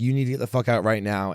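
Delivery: normal talking voice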